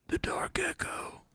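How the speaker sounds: breathy, hushed whisper, barely audible, breathed out. Reading a listener email aloud, trading sentences: Batman voice. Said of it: "can you read this with a Batman voice?".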